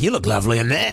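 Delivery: low, creepy-sounding tone.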